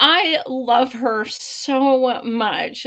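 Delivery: choked-up, tearful, fighting back tears, very slow. Reacting to a video clip, holding back tears. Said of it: "I'm trying not to cry again".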